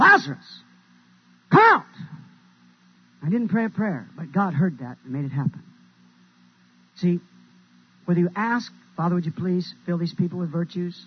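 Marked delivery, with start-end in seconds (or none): 0.0-1.8 very high, loud, raised, swooping call. Preaching a story, retelling him calling out to Lazarus, in a loud voice. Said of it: "he says in a loud voice".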